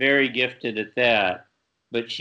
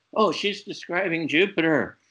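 high, put-on thrilled, eager, excited shout; 6 semitones higher than usual. Retelling an astronomy lover reacting to a vision: imitating Joseph Bates shouting excitedly. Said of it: "So he starts shouting".

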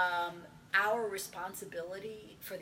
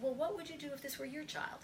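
mock pointed, challenging, rapid-fire delivery; 8 semitones higher, 6 dB quieter than usual. Recounting a talk with a woman about testing, the speaker reenacts the exact tone used. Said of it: "In pretty much that tone".

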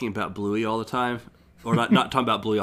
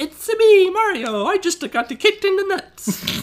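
very high cartoon voice with wide swooping pitch; 7 dB louder than usual. Recalling first hearing the game's opening line, in a high-pitched Mario voice. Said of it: "his high-pitched Mario voice".

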